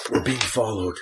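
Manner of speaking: theatrical, exaggerated stage whisper. A tabletop player whose character is being followed warns the party in a stage whisper. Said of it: "I will say a bit of a stage whisper".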